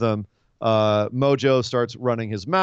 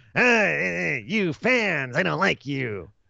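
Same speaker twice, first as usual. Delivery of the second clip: very slow, rough, creaky comic voice, drawn-out "eh"; 4 semitones higher than usual. Doing a wrestler impression that addresses the fans, in a Gilbert Gottfried kind of voice. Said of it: "Like a Gilbert Gottfried kind of thing".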